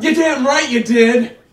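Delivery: loud shouting. Reacting to the other man's account of his New Year's Eve, yelling. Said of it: "Why are you yelling?".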